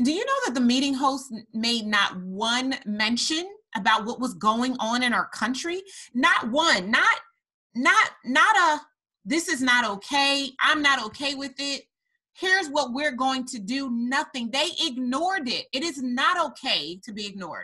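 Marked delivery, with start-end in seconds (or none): 6.1-17.6 raised, impassioned, insistent voice with elevated delivery. Addressing listeners and pressing home a point, raised, elevated voice. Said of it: "you can hear the elevation in my voice".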